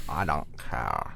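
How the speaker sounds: put-on slow, low, soft California Valley Girl drawl.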